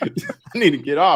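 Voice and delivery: very high, panicked, stretched and drawn out. Retelling a companion panicking on a plane: imitating someone panicking. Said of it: "she started over panicking".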